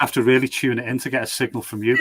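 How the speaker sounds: usual speaking voice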